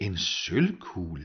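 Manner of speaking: surprised, astonished tone. A young woman repeats what she was just told, surprised. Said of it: "gentog den unge kvinde forbavset".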